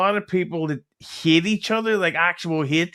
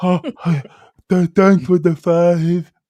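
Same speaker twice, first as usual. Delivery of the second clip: mock hot-food-in-mouth speech, louder; 7 dB louder than usual. Retelling how certain people thank for donations: imitating talking with hot food in mouth. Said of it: "they talk like they have, uh, hot food in the mouth".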